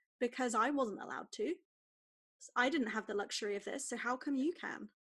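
usual speaking voice

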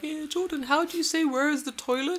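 put-on high-pitched little kid voice.

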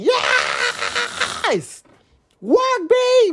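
put-on shrieking cry, very high and swooping. Recalling a concert, hands reached toward the stage, retelling a scream. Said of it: "and I was screaming".

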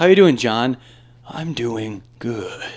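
acted voice straining words out. Explaining how the character talks: John Wick impression forcing out words. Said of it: "force out words".

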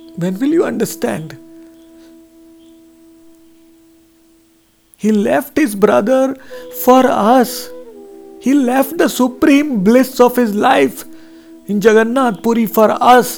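pleading voice, speaking through tears. A speaker pleading with listeners to understand, in tears. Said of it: "I'm literally in tears now".

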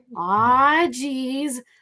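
put-on Midwestern accent. Speaker recalls doing accents to distract an anxious driver, midwestern accent. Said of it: "her comfort accent is the Midwestern accent".

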